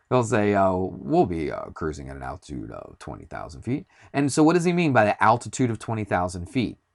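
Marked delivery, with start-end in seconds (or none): 0.7-3.8 very deep, swooping captain's intercom pilot voice. Explaining altitude, imitating a pilot's announcement in a deep pilot voice. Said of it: "He always does this with his voice".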